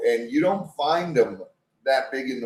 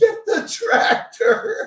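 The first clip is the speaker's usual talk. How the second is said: put-on urgent, loud yell; 4 dB louder than usual. Telling a story about holding on and being pulled, retelling his own yell. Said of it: "And I'm yelling".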